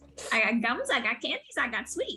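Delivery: sing-song little gnome merchant voice. Voicing a gnome merchant answering a customer, in a gnome merchant voice. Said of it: "a gnome is sitting on a high stool".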